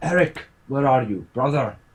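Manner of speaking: calling across, voice lifted. Calling in character for a companion who is missing: calling out in a raised voice. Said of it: "I'm raising my voice enough that you could hear me".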